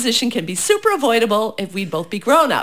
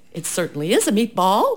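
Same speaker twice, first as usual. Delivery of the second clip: plain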